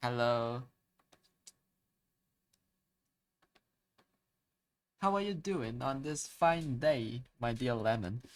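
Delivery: put-on British accent. On stream, greeting a viewer called Lemon in a British accent. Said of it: "I I like British".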